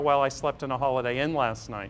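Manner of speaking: usual speaking voice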